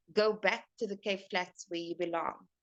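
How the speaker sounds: ordinary talk, nothing marked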